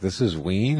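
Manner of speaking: plain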